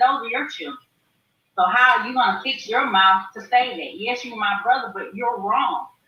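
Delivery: normal talking voice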